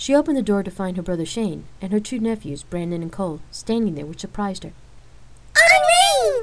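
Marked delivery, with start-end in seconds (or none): 5.6-6.4 thrilled cry, very high and very loud. Her two nephews hug her at the door, shouting excitedly. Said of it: "They shouted excitedly".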